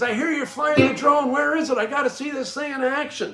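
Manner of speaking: very high, eager hollering yell. Retelling the superintendent arriving in his gator: imitating someone yelling. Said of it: "And he's yelling".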